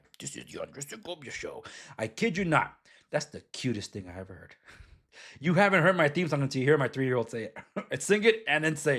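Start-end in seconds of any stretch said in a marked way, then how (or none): 0.2-1.6 soft, hushed, grand, epic trailer-announcer delivery. Parent retells their three-year-old copying the show's theme, imitating epic announcer voice. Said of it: "trying to do the epic voice guy".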